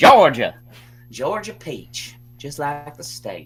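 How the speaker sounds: drawn-out Southern accent with wide swooping pitch.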